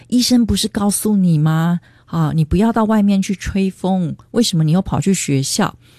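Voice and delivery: ordinary delivery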